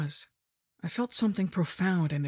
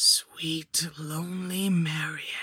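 wheezing voice like falling sand. Narrator reads death greeting Marion, wheezing in a voice like falling sand. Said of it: "it wheezed in a voice like sand falling".

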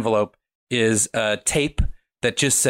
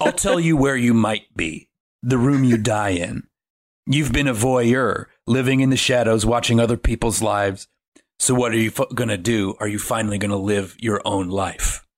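put-on very scary, creepy, menacing voice. Retelling a film, speaker voices the tape recorder's message to Adam in a very scary voice. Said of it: "very scary voice go".

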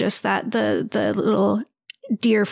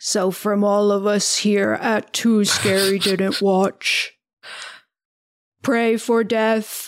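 warbly robotic voice. Signing off the podcast episode for everyone on the show in the warbly Frank Bugman voice. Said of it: "the warbly Frank Bugman voice".

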